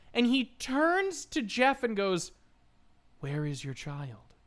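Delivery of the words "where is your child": dead serious, low, grave tone. Retelling a movie scene where one character turns to another: imitating a very serious delivery. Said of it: "he says it very seriously".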